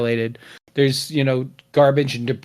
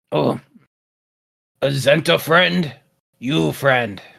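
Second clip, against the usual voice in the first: put-on undead ghoul monster voice. A player greets someone in character, in a ghoul voice. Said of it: "Why are you trying to imitate me?".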